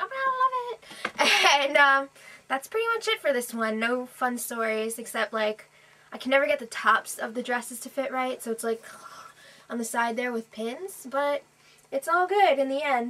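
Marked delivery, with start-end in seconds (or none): 0.0-1.6 high-pitched gushing voice with laughter. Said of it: "Everyone was like".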